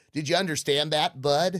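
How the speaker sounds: fake, put-on American accent. Retelling how friends switch accents when she can't understand them: put-on American accent. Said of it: "they just do an American accent for me".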